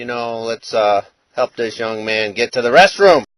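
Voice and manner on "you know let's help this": usual speaking voice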